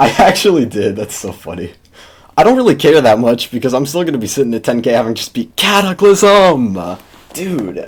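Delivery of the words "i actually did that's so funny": amused, laughing while speaking. Realizing something about yesterday's seven-star daily, laughing.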